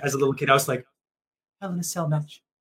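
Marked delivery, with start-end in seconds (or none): 1.6-2.4 soft mutter under the breath. Retell how you, as a little kid close to him, spoke, retelling words said under the breath. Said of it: "from under my breath".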